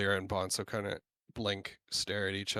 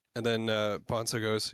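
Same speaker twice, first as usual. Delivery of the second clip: ordinary delivery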